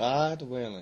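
put-on, attempted American accent. Asked to say the phrase again in an American accent, American accent. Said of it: "Can you say that in an American accent?".

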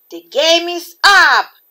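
very loud, high-pitched, heroic shouting yell. Super Tato, searching for the runaway pea, spots it and calls out: yelled. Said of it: "Yelled Super Tato".

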